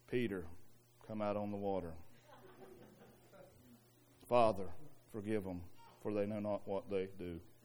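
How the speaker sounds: very low, very soft, flat, inhuman monotone drone. Mocking how movies portray Jesus, in a flat monotone Jesus voice. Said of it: "So monotone, so unhuman".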